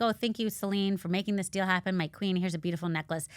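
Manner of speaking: normal talking voice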